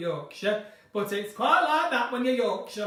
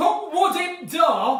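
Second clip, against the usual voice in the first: very slow, loud, put-on Yorkshire accent; 6 semitones higher, 6 dB louder than usual. Quoting a saying of the speaker's mum from Yorkshire: Yorkshire accent. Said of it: "My mum's from Yorkshire".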